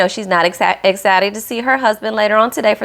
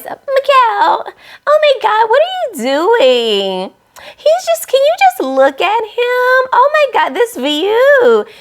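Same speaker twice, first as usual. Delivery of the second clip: put-on extra baby voice, very high and sing-song; 14 semitones higher, 3 dB louder than usual. Mimicking how Lindy talks to Miguel, in Lindy's extra baby voice. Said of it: "she gets this extra baby voice".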